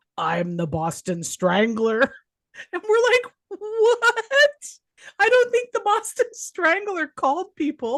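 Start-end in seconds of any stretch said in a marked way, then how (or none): 0.2-2.0 low, rough, gravelly put-on voice. Retelling a cousin's childhood prank phone calls, imitating his gravelly voice. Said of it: "he would get this real gravelly voice".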